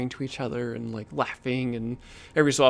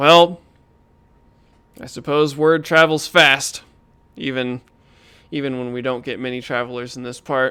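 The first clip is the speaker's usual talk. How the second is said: booming, angry, irritated character voice; 8 dB louder than usual. Voicing a large butcher who glares at the man who whispered: angry butcher NPC voice. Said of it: "he'll look angry".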